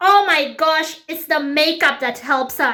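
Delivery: slow, giggling schoolgirl-style gossipy voice. Retelling a guest's remark to another girl: imitating someone giggling while talking. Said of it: "they're both giggling and laughing like high school girls".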